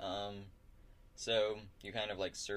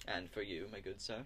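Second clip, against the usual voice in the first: ordinary talk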